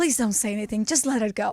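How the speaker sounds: put-on begging, pleading voice. Retelling how her husband on a plane pleaded: imitating someone begging. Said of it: "was begging me".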